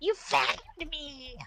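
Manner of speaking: grating, gravelly, nasal nails-on-chalkboard voice. Demonstrating an awful character voice, nail-on-chalkboard grating voice. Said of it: "whatever sounds like a nail on a chalkboard out of a voice, whether it's gravelly, husky, nasally, chirpy".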